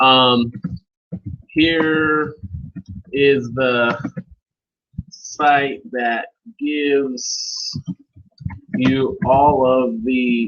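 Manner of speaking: slow, drawn-out dictated wording. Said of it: "take that link out and say".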